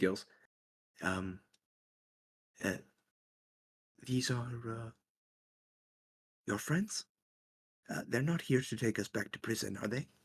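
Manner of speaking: quiet, halting half-whisper. Game master voicing Galorp half-whispering to Gills. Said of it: "she whispers to you".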